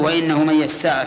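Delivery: ordinary talk, nothing marked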